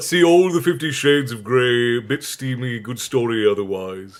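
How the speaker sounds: ordinary talk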